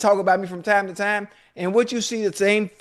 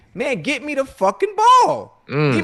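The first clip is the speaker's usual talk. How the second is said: fussing, snappish outburst with irritable, swooping tone; 4 semitones higher, 4 dB louder than usual. Telling Joe how he lost it and demanded the ball: retelling snapping in general. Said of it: "I'm just snapping in general".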